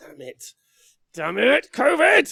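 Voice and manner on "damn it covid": put-on very high, very loud, grumpy old-man scream. Complaining about missing a trip, mock old man screaming at clouds. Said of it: "like an old man just screaming at the clouds".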